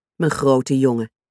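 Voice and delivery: ordinary delivery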